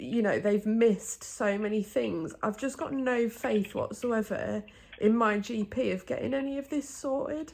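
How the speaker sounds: distressed, upset, close to tears. Telling another speaker about the morning's appointment, getting upset. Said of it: "sorry, I'm getting upset".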